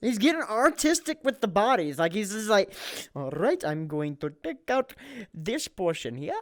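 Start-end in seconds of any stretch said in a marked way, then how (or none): 3.1-6.3 put-on Indian accent. Imagining a killer getting artistic with the bodies, put-on Indian accent. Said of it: "Why did you go to an Indian accent?".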